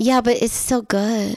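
ordinary delivery

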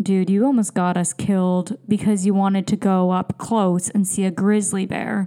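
ordinary talk

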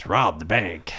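cowboy-style Western voice.

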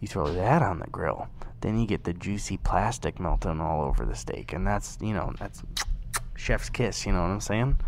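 low, soft, quiet whisper.

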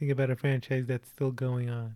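ordinary talk, nothing marked

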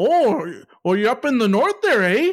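put-on stock Canadian accent. In British Columbia, retelling what a guy said as they walked in, stereotypical Canadian accent. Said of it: "your stereotypical Canadian like bit".

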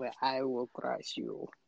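whispered, failed put-on Russian accent. Friends trying to repeat a quoted line, failed russian accent. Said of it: "I can't get the accent".

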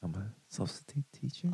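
very quiet, gentle, hushed soft-spoken voice. Impersonating the guest by talking softly: imitating soft-spoken talking. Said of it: "just talking softly, being like".

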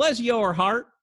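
clumsy put-on, high Southern American accent. Quoting a sweet woman's phrase, attempting a bad Southern accent. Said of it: "I can't do a good Southern accent".

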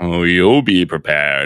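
mock, put-on supervillain voice. Speaker quotes a guy's remark, retelling it in a supervillain tone. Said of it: "it was even like in a supervillain tone".

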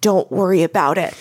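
put-on husky American growling voice. Retelling an unfamiliar voice answering back through the door: husky american growl. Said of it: "this sort of husky voice that I don't recognize that is American, growls back".

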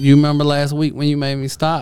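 ordinary talk

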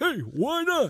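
loud, pitched-way-up puppet voice. After a bad German impression, one speaker redoes the line as Alf. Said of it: "It sounded like Alf".

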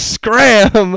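very high-pitched, shrill, loud holler. Recounting ordering a man to leave: retelling a holler. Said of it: "I hollered".

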